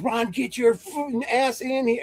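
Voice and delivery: high-pitched, angry, full-lung screaming. Recalling his mom calling him inside after high school, imitating her screaming. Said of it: "she's screaming at the top of her lungs".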